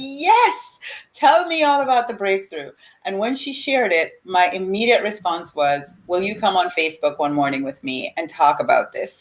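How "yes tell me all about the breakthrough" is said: play-acted, high, thrilled screaming full of delight. Retelling her reaction when someone shared a breakthrough; retelling excited screaming. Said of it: "I'm screaming".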